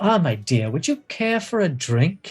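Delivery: put-on older woman character voice. Narrating a scene and voicing a woman who turns to the listener, older woman character voice. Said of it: "a very beautiful older woman".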